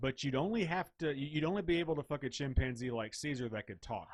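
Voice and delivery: normal talking voice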